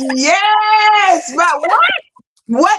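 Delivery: mock very slow, high scream, yes stretched long. Retelling watching an interview on the phone: retelling own screaming. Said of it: "I was screaming at the phone".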